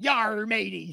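quiet pirate voice. Asked for their best pirate impression, the speaker answers in a pirate voice. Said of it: "Give me your best pirate impression".

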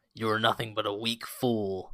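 gruff wolf growl voice. Retelling what a character said after he missed, in a rough wolf-like growl. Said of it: "he says it in this like rough wolf sort of like growl".

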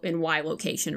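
usual speaking voice

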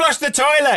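play-acted, very high, shrill, shouted voice. Retelling what he shouted through the house: imitating someone shouting. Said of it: "he shouts and he goes".

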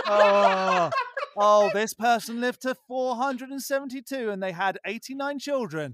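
read straight, then breaking into laughter.

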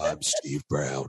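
voice pushed as low as possible, failing to reach. Trying and failing to match a man's low voice, failed Steve Brown impression, very low. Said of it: "I sound like a serial killer".

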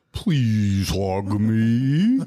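garbled, warped doll voice, drawn-out "me". Imitating a talking doll whose battery is dying: dying-battery talking doll voice.

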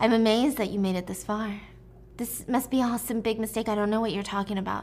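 ordinary talk

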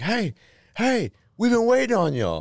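mock very high, rowdy, swooping hollered yell. Retelling a subway trip, speaker imitates some dudes yelling at them. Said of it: "some dudes like yelling at us".

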